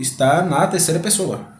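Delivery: stressed delivery.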